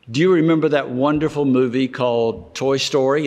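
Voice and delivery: plain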